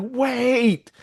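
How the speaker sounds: very high, small shout, "wait" drawn out. Retelling a scene where a young character's little voice rings across the arena: Egg's little voice shouting. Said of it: "this dude's little voice over the entire arena".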